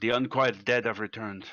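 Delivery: put-on quite strong French accent. Role-play character waking the others to warn of skeletons outside, French-sounding accent. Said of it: "sounded quite French".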